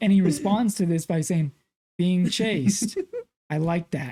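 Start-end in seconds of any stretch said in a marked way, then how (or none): 2.0-4.1 slow, extremely sinister sing-song tone. Retelling how Coach Willis answered Casey, in a mock-sinister tone. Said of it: "He says it in like the most sinister tone".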